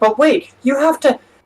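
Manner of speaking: shrill, very high pitched yelling. Retelling two servants yelling at a man leaving the room: acting out servants yelling. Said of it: "the two servants are like yelling at him".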